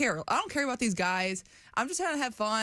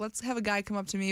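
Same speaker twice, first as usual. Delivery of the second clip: normal talking voice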